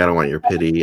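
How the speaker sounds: ordinary delivery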